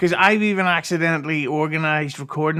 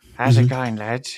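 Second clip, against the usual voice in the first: talking with teeth clenched together, lower; 4 semitones lower than usual. Showing an impression of Eccles, teeth staying together while speaking: Eccles impression, teeth together. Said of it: "I've been working on my Eccles impression".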